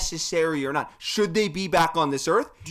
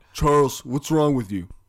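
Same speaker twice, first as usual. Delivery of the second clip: deep, put-on hulking giant's big-man voice; 4 semitones lower, 4 dB louder than usual. Quoting a basketball commentator on a slam dunk: imitating a seven-foot-tall man's voice. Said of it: "was that a bad impression?".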